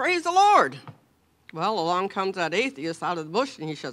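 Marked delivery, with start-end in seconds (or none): 0.0-0.8 very high, elated, joyful raised shout. Telling a story about an elder lady finding groceries, retelling a joyful shout. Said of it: "And she shouted".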